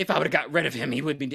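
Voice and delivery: put-on angry woman's voice. Retelling a movie scene where a widow blames a child: imitating an angry woman. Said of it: "she's very angry at".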